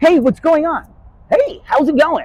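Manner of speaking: AI assistant voice. Imitating a young fan greeting someone at dinner: ChatGPT voice. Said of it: "Chat G P T voice".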